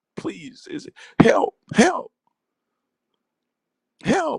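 shrill, very high, tearful sobbing. Voicing a top lip begging for help: acting a crying lip. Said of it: "the top lip is crying".

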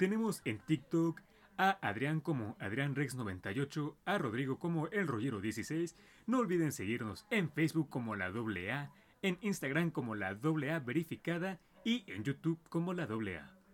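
radio announcer voice, promo-style read. Plugging the hosts' social media accounts for the audience, in an announcer voice. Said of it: "se las va a dar el voz de locutor".

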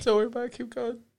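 speaking through laughter. Asked by another player why they're laughing, answering while laughing. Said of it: "Why are you laughing over there?".

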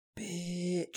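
hushed half-whispered word. Retelling a comedy sketch where a man insults his wife: imitating a half-whisper. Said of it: "they whisper it in case they can hear them".

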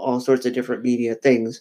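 ordinary delivery

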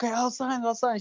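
tearful, crying, giving-in pleading voice. Retelling how she finally agreed to sign on the wedding day: imitating someone crying.

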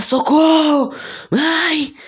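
very high, straining, attempted scream. Retelling a sleep paralysis episode, imitating trying to scream. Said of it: "eu tava tentando gritar".

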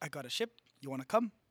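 put-on New Zealand accent. Retelling what the rock character Korg says, in a Korg impression. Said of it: "that's Australian, or is that is New that Zealand?".

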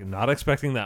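plain

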